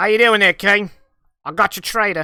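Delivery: very loud, shaky-skill put-on Australian accent. Voicing a character who shoves someone before the king; Australian accent. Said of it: "I gotta go Australian".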